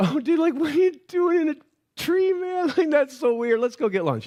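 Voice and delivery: put-on easygoing, laid-back, chill bro tone. Acting out Jesus strolling to Jerusalem: casual laid-back Jesus impression. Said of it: "He's like".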